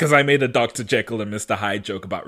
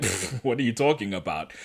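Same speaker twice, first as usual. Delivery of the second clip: scoffing, dismissive brush-off; 7 dB quieter than usual. Retelling how a character said the line: imitating a scoffing dismissive tone. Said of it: "she says it in a tone of, like, someone being like".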